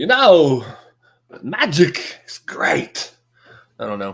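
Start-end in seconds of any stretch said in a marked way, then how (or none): 0.0-3.1 weak put-on celebrity voice, very slow, swooping up and down. Imagining a magic genie voiced differently: not very good Christopher Walken impression. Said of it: "That's not a very good impression".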